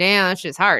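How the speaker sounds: ordinary talk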